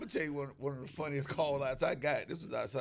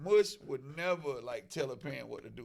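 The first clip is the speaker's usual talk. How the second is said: normal talking voice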